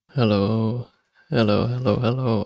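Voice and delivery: sleepy voice. Greeting everyone at the start of the session, sleepy. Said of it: "I may sound sleepy".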